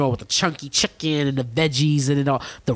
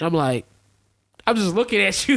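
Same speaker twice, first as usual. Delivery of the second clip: plain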